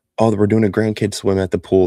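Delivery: plain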